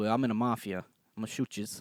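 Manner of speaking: mock elderly Italian voice. Explaining why the old italian joke won't work there, imitating an old italian. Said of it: "because old Italians will go".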